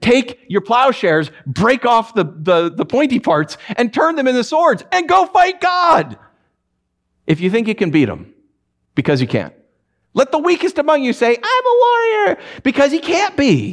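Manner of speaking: sarcastic, mocking put-on war cry.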